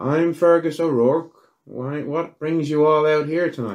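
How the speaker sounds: put-on high-pitched elderly man's voice. Voicing a very old man greeting the group: Fergus O'Rourke voice. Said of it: "he looks at the four of ye and he's like".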